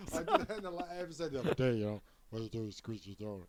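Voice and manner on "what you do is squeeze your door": felt-puppet cartoon character voice. Repeating a line from an earlier episode, sounding like a Muppet. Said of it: "And you sound like a Muppet".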